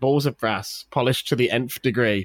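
ordinary talk, nothing marked

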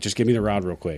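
loud yell, calling out across a distance. Retelling calling to Jackson while fighting the wind: imitating a yell. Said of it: "I'm just yelled at him".

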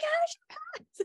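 very high, shrieked scream. Telling the listener how they reacted to news the listener passed; retelling own screaming. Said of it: "And I'm like screaming".

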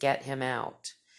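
deep, dark, sinister, menacing voice. Retelling what a voice in the closet said: imitating a deep sinister voice. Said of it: "in a really deep, sinister voice".

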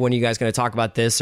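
ordinary talk, nothing marked

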